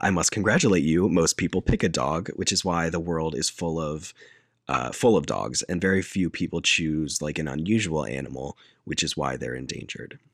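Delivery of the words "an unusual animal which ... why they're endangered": normal talking voice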